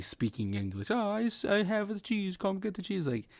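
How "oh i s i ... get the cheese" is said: put-on mock Swedish accent. Retelling a Muppet cheese character's lines: Swedish Chef accent. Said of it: "he was making the accent".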